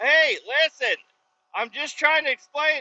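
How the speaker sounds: very high, flustered, freaked-out, panicked pleading. Retelling being yelled at by a guard, replaying freaking out. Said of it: "And I'm like freaking out".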